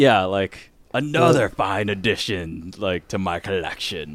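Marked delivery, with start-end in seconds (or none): 0.9-4.2 gruff metallic cyborg voice, lower. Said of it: "you gotta go gruff and add in, like, metallic".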